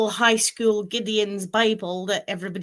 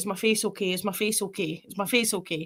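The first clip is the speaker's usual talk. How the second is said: sobbing, repeating the same words again and again; 7 dB quieter than usual. Retelling what a boy said while curled up in a ball: imitating someone crying. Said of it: "curled up in a ball, crying. He's like".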